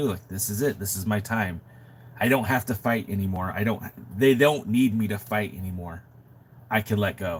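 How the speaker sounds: ordinary talk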